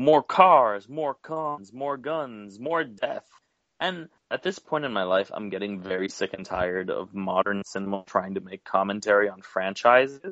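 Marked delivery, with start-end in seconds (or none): 0.0-3.2 high, acted, drawn-out yelled rant, each phrase stretched. Retelling how a movie character starts yelling: imitating a character yelling. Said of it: "he just starts yelling".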